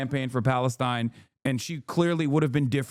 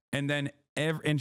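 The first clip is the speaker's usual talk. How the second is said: normal talking voice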